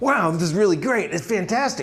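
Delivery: lively, eager, high, enthusiastic voice. Demonstrating tone level four point oh in a talk: enthusiastic tone. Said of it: "that sounds enthusiastic".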